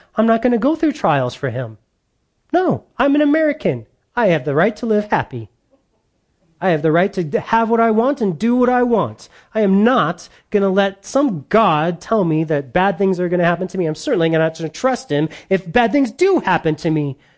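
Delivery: put-on, sarcastic, entitled attitude. Acting out people who dishonor God, sarcastic mock entitled voice. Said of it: "I'm being sarcastic".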